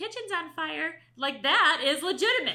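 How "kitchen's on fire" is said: put-on tiny little child's voice. Imitating a child interrupting a parent for attention: imitating a little kid's voice. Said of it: "that little, little, little voice says something like".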